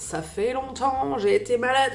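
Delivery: hoarse, cracked, broken, duck-like voice.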